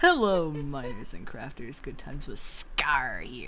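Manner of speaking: put-on voice dropped low. Trying out a Scar voice for the others: Scar voice. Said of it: "Can I do a Scar voice".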